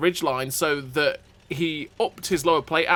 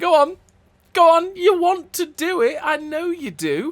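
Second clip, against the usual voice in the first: very high, slow, goading teasing taunt; 12 semitones higher, 4 dB louder than usual. Voicing an enemy tank daring him to shoot: imitating a teasing taunt. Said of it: "that Ferdinand is still teasing us".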